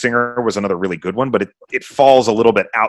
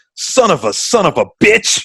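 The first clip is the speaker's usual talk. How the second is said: slow, pitched-up grumbling mutter under the breath; 10 semitones higher, 3 dB louder than usual. Retelling a scene, speaker quotes a character walking away from the campfire, retelling a muttered curse. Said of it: "he mutters under his breath".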